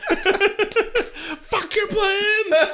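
high, slow, laughing, mocking voice.

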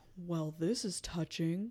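low, put-on, sultry, trying-to-be-sexy seductive voice. Retelling a book scene, voicing an interrupting stranger: trying to sound sexy. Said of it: "sounds like you're trying to be sexy".

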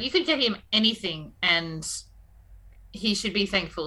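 ordinary talk

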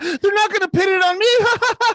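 nervous cackle, very high, slow and loud. Imagining leaked audio of Kamala Harris, Kamala Harris nervous cackle. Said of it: "like a nervous cackle".

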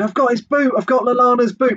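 very high-pitched, excited shriek. Retelling what someone near the tunnel cried during a pitch invasion: imitating someone screaming. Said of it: "someone near me just screamed".

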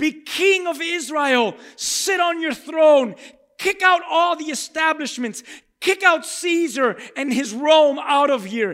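loud crowd screaming. Retelling what the crowds cried out: imitating a screaming crowd. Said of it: "the crowds were screaming".

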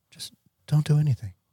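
put-on easy, unruffled voice. Retelling the answer he gave when asked what to do, imitating his calm voice. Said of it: "he just said in his calm voice".

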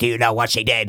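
put-on demon horror voice. Quoting a scary movie scene: Exorcist demon voice. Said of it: "that actually might be the best horror voice".

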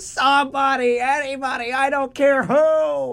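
very high, very slow, drawn out, who stretched long. Retelling a cartoon moment when characters are trapped: Squidward impression. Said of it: "and Squidward's like".

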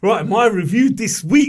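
very loud, eager and excited, drawn out. Starting to introduce this week's review: excited. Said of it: "I don't know why I'm sounding so excited".

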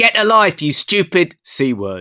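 very high, very loud, drawn-out full-voice scream. Retelling how a man next to him screamed at a girl, imitating a man screaming. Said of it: "at the top of his voice".

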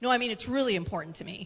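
plain

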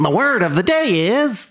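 very high, swooping cartoon villain voice. Speaker switches into a put-on voice: cartoon villain voice. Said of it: "That's my cartoon villain voice".

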